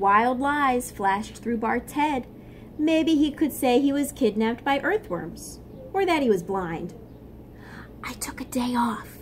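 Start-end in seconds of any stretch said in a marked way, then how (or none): 8.0-9.2 soft, hushed whisper. Bart, a sand ant, answering a guard, whispering. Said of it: "Bart whispered".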